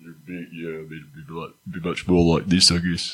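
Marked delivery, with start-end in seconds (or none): 1.7-3.1 big dragon character voice, much lower. Showing the others how the dragon character would sound, bigger dragon voice. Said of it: "is it lower at all".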